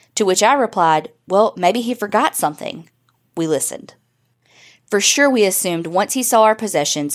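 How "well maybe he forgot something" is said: ordinary talk, nothing marked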